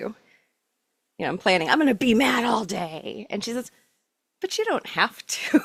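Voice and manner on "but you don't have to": mock kind, gentle voice, pitched up. Retelling what another voice told them when they planned to be mad, imitating a gentle, nice voice. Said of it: "this other voice came and she was gentle, she was nice".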